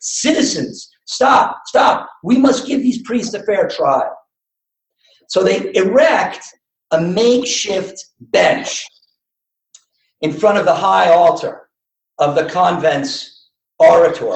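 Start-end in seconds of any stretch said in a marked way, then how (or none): 0.0-4.2 derisive, mocking yell. Narrator retelling the gang leader halting the slaughter of priests: retelling a mocking yell. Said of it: "yells out in a mocking tone".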